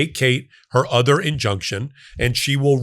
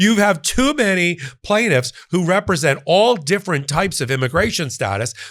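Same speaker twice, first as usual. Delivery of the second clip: put-on whiny, whingeing, complaining tone; 4 semitones higher than usual. Acting out his biggest argument in court, in a put-on whining voice. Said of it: "This is my artist rendering".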